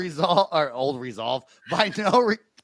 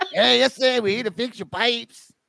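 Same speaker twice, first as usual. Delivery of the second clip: poor put-on Mexican accent, pitched up; 5 semitones higher than usual. Joking with friends about plumbers who come over dressed like this, bad fake mexican accent. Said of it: "That wasn't even Mexican".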